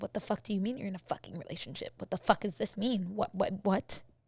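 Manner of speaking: stunned, baffled, disbelieving, shocked outburst. Retelling the reply to a girl claiming they're in a relationship, retelling a baffled reaction. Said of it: "I was baffled".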